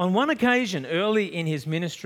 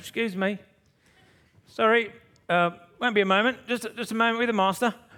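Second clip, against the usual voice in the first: put-on, pitched-up Cockney accent; 5 semitones higher than usual. Imagining a man lowered on a mat before Jesus: Cockney accent. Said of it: "some sort of Cockney guy coming down saying".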